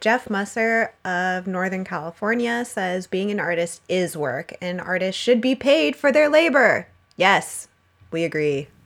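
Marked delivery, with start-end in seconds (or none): 4.6-6.9 fast, rising all-caps voice. A host reading out a listener's message written in all caps, all caps voice. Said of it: "I put on my all caps voice".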